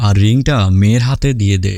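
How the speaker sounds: plain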